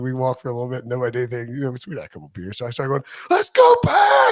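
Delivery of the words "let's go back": very loud, very high scream. Walking down the Tiger Walk with friends after a couple beers, retelling own screaming. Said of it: "and like screaming".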